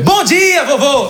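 bright triumphant Portuguese.

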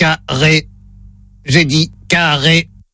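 low, flat, monotone robot voice. Playing the robot in a word-repeat hearing test, in a robot voice. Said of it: "Voix de robot enclenchée".

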